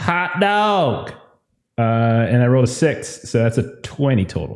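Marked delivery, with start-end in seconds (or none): 0.0-1.1 high, loud shouted-out call. In a dice game, the game master shows the player how to call it: yelled. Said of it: "You got to yell it".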